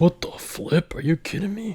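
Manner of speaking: mocking, put-on generic voice. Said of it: "basically a mocking kind of my dad".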